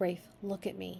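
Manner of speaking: usual speaking voice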